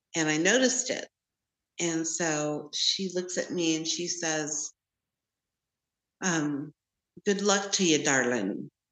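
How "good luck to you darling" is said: strange, odd-sounding put-on Scottish accent. Retelling what a stranger with a walking stick said to the speaker, Scottish accent. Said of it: "With like a Scottish accent".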